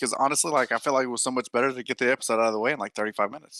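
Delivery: words tumbling out at breakneck speed. Answering how they are doing, trying a new bit: talking very fast. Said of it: "talk as fast as they do on Star Trek Lower Decks".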